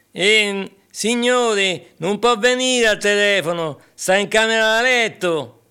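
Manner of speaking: put-on voice with a Roman accent. Retelling a phone sketch, playing the waiter answering the master: roman accent. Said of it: "cameriere di colore che parla con l'accento romanesco".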